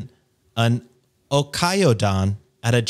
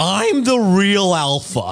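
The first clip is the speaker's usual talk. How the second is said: neckbeard caricature voice, pitched up; 7 semitones higher than usual. Reading a forum story to the others, doing the poster in a mock neckbeard voice. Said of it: "Gotta hear the voice".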